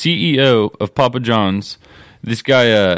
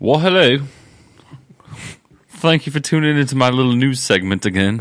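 news anchor voice in a put-on British accent; 2 semitones higher than usual. Playing a news anchor in a comedic segment, the speaker greets listeners in a british accent. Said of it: "loving talking in a British accent".

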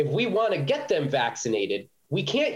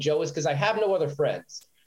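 ordinary talk

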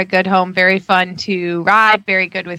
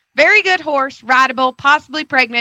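Southern accent with pitch raised; 6 semitones higher than usual. Asked to channel Gloria, reading a horse description: Gloria's southern accent. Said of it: "read this in a southern accent".

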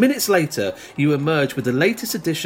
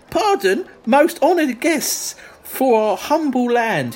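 very high, fawning put-on Essex accent voice; 10 semitones higher, 3 dB louder than usual. Narrating a story, a local guide interrupts arriving guests: high-pitched Clacton guide voice. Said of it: "a small fat man with eyeglasses perched on his nose like a falcon's interrupts. ... he's going to be a bit high-pitched. ... So let's say he's from Clacton".

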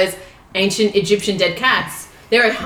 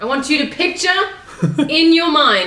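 loud, high-pitched, big storyteller-style delivery; 7 semitones higher than usual. The guest starts telling a story on the show as invited, loud. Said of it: "Just getting loud for this".

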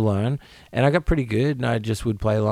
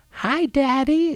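put-on high-pitched American kid accent. Parent imitating their America-born kid, imitating kid's American accent. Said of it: "in an American accent".

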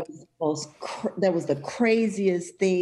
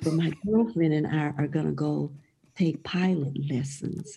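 whispering, much lower; 3 semitones lower than usual. Whispering so her husband in the other room won't hear, whispering. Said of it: "I'm gonna whisper because my husband's in the other room".

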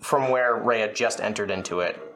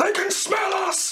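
very high shriek, screaming. Having just told the others they're going to scream, the speaker is screaming. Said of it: "I'm going to scream".

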